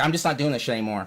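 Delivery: ordinary delivery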